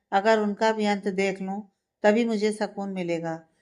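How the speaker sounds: ordinary delivery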